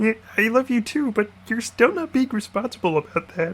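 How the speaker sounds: very high-pitched, loud cartoon frog puppet voice. Voicing the blob, who answers an 'I love you', in a Kermit the Frog voice. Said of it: "giving the blob a uh, Kermit the Frog voice".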